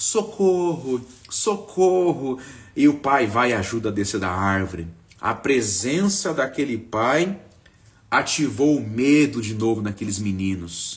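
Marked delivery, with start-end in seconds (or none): 0.0-2.4 play-acted, high, frightened and scared cry. Retelling a cartoon scene where two boys on a tall pole panic: imitating scared cry for help. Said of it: "E os dois voltaram a ter medo".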